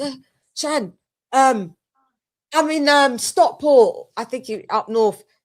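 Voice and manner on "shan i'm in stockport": hesitant, halting slight stutter, pitched up. Retelling a phone call he made: imitating a slight stutter. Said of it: "like a bit of a stutter".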